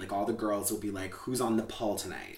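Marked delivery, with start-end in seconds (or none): none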